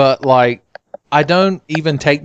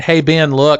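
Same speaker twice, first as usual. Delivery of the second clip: put-on deadpan, flat stoic delivery. Retelling how a man called the speaker over in dead silence, deadpan. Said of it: "like complete stoic facial expression".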